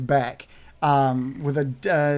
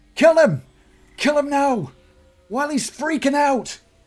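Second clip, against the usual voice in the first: very high, loud shrieking and screaming; 12 semitones higher, 5 dB louder than usual. Narrating a game, voicing a woman commanding bandits to attack, screaming orders. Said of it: "screams at the bandits".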